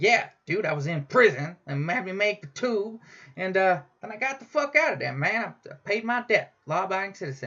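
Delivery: casual, relaxed dude-style talk. Retelling what a patient said about prison: imitating a patient. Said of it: "a mark-on impression of this dude".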